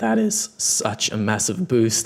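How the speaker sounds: thrilled, excited voice cracking mid-line. A commentator reacts to a team reaching the grand finals, voice cracking. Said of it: "you can hear that in my voice with the little voice crack there".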